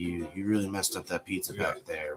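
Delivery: put-on quiet whisper. Retelling quietly telling off a worker in the corner: imitating a quiet whisper. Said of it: "I'd quietly whisper to them in the corner".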